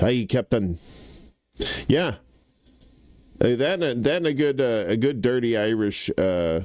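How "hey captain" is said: put-on Scottish brogue. Speaker shows off a favourite accent: Scotty Scottish brogue. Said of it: "a good Scottish brogue, you know, that uh, kind of like your Scotty from Star Trek".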